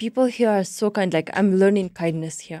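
ordinary talk

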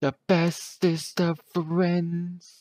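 drawn-out, very high, very slow sing-song.

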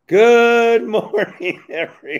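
strained, shrill, very high, very loud voice. Trying out a recovering voice with a greeting: recovering voice, a bad one. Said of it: "So the voice is recovering".

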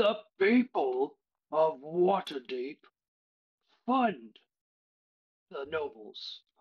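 big, slow, hulking creature voice. Narrating a massive turtle creature stepping out of a crowd; big booming voice. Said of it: "he has a big booming voice".

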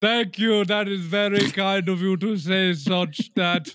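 high-pitched, polite call-center voice. Acting out a call with Raj from a call center: voicing Raj. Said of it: "It sounds like I'm his therapist".

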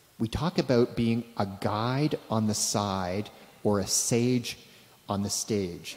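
careful, unhurried, slow, deliberate enunciation. Speaker addresses an audience, slowing down so it gets translated: slow, careful speech. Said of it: "I'll try and say this slowly".

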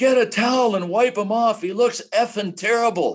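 very high-pitched, shrill screaming yell. Retelling a man yelling at the stage manager, re-enacting the yell. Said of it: "So he's yelling at her".

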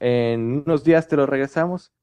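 ordinary delivery

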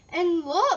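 very loud, high-pitched crying out. A frog spots two little robins hopping about the tree, crying out. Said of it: "cried Frog".

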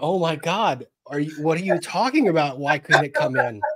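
mock laughing while talking. Retelling their reply to a man's deadpan answer, retelling laughing speech. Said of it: "I could not stop laughing".

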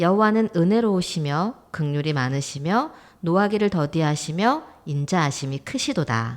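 normal talking voice

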